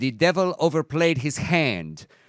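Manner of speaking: put-on flawless Spanish accent. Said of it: "I am so happy to play Ted Cruz' father".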